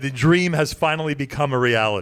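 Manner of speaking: normal talking voice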